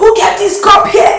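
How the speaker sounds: angry shouting, high-pitched, slow and loud.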